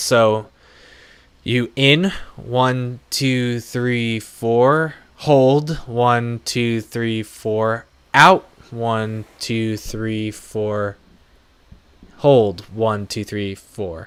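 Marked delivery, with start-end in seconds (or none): 1.4-14.1 steady, even count, each beat even. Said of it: "So, you go on four counts".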